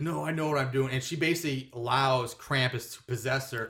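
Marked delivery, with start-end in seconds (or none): none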